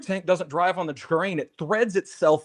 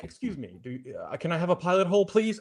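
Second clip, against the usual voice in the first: mock courteous, mannerly, polite, hesitant tone; 4 dB quieter than usual. Voicing a normal screw politely asking for a pilot hole: polite voice of a screw. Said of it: "A normal screw is like".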